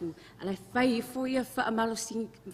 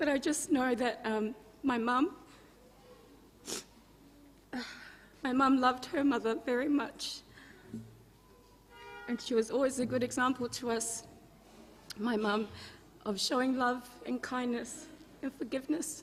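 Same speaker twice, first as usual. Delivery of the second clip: crying, tearful, voice breaking and cracking, much slower. Remembering a late grandmother in front of others, crying, voice breaking. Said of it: "I don't know why I'm crying".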